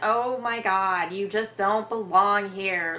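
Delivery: put-on Valley Girl voice. Imitating how Breakfast Princess talked: Breakfast Princess Valley Girl voice. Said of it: "that sort of Valley Girl type".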